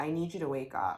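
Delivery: normal talking voice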